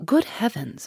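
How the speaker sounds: soft murmur, under the breath. Narrator reading John's remark as the group looks at each other, murmured. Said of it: "murmured John".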